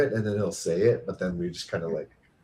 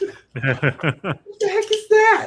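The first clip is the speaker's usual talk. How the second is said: put-on very high, slow, laughing kid voice. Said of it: "I say that sometimes".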